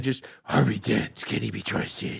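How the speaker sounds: put-on superhero voice with lisp. Recalling Batman voices traded while playing Call of Duty: Batman voice with a lisp. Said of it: "Batman voice at each other".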